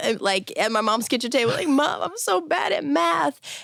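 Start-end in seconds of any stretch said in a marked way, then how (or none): 1.7-3.6 very slow, high, tearful sobbing. Retelling crying to Mom over a calculus book: retelling crying. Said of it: "crying over my calculus book".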